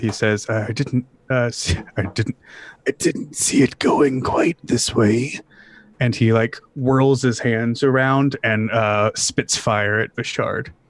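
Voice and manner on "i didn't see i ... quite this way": muttered under breath, as an aside. Voicing a red-robed figure stepping forward: muttering under his breath. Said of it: "you can hear him under his breath".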